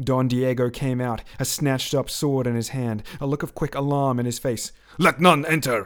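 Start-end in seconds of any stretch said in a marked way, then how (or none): 5.0-5.9 curt, cutting, sharp and raised voice. A man hurrying out of a door with a sword gives an order: said sharply. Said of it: "he said sharply".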